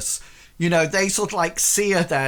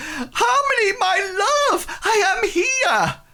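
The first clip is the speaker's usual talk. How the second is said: very high, slow, drawn-out shout. A man holding out a drooping rose calls to Harmony: shouting. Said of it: "and he shouts out".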